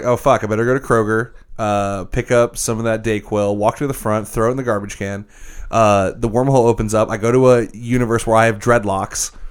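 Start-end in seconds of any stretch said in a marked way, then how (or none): none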